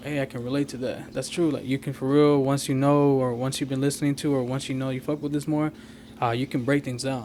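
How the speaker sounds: normal talking voice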